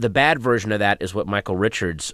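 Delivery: ordinary talk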